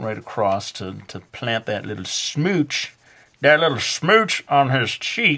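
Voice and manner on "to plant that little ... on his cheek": gradually shifting into a southern US accent. Artist describing shading a drawing for viewers, in a southern accent. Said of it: "am I doing like a southern accent?".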